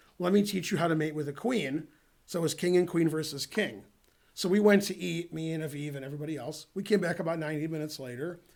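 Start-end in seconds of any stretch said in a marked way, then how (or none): none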